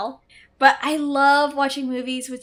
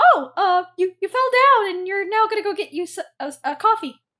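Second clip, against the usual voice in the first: high puppet voice, stumbling and tripping over the words; 7 semitones higher, 3 dB louder than usual. Retelling Miss Piggy's line to a fallen news anchor: Miss Piggy voice. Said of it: "She's like".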